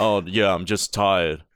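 loud, offhand, macho tough-guy voice. Retelling how a friend answered after gaming, imitating Logan talking macho. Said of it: "That's how he sounded".

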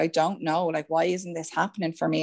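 put-on tearful crying voice. Retelling a phone call to a sister, imitating own past crying. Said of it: "bawling, crying down the phone, being like".

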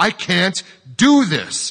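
very loud, very high, slow, vehement cry. A man answers a woman who insists he must, louder and vehement. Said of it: "he said louder and more vehemently".

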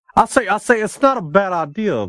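very high Southern rooster voice, cartoon drawl. Joking about a Southern gentleman podcast, the speaker slips into a Foghorn Leghorn voice. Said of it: "That I turn into foghorn Leghorn".

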